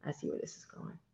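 low, hushed dawning realization, then whispered. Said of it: "and I said".

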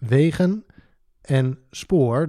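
wegen stressed first, wegen and spoor each separated by pauses. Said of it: "Met nadruk op die volgorde".

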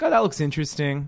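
ordinary delivery

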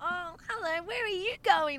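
weird, creepy, very high-pitched voice. Retelling Steph greeting a kid while out walking, in Steph's weird creepy voice. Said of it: "Like in this fucking weird, creepy voice".

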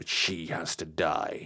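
sneering, contemptuous, very slow and drawn out. Graham, taken over by something evil, points at Gaynor, sneering. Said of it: "he pointed a finger at Gaynor and sneered".

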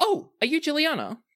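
suddenly perked-up, eager, very high perky voice. Voicing an elf courier who hears someone speak up: elf perking up, eager. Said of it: "the elf perks up and she says".

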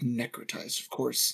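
muttering under the breath. She is getting very angry and mumbles under her breath. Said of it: "she just mumbles under her breath".

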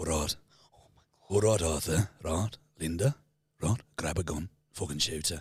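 low, deep Birmingham gangster voice. Asked by the other speaker to do it again, doing a Tommy Shelby impression. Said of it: "Can you do Tommy again?".

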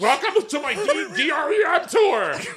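put-on woman's voice, high-pitched and very slow. Giving a house tour while imitating her voice. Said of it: "I love when you imitate her. I love when you do the voice".

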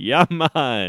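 put-on Jamaican accent. Joking with co-hosts after being teased for it: put-on Jamaican accent. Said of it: "saying things in a Jamaican accent like Brandon".

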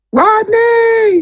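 play-acted very high, swooping, drawn-out yell, name stretched. Telling how she yelled his name for his producer tag, retelling a yell. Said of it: "And she just yelled".

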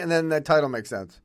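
ordinary delivery

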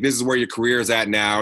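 ordinary talk

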